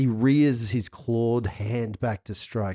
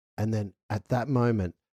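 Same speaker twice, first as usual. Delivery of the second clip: ordinary delivery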